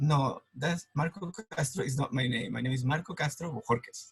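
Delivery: ordinary talk, nothing marked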